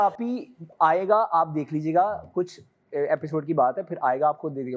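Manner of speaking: normal talking voice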